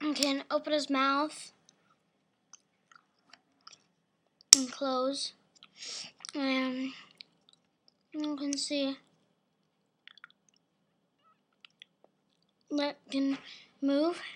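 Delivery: talking while chewing candy. Showing the features of a Lego dino set in a tutorial, chewing candy. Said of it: "I'm chewing some candy".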